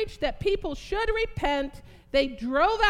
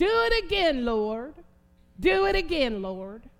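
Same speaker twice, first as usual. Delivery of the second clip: put-on, drawling Southern voice; 2 semitones lower than usual. The speaker quotes what Tracy Cook says, in Tracy Cook's southern drawl. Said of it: "Isn't that southern drawl?".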